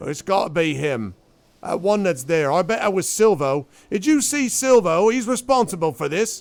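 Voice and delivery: gruff accusing voice. Retelling a commotion, the storyteller voices what Schenker said, in Schenker's gruff voice. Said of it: "you hear Schenker's sort of gruff voice".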